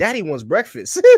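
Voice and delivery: put-on high Southern accent. Retelling an actor's answer on a news show: imitating Anthony Mackie's Southern accent. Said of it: "he said it in his, like, Southern accent".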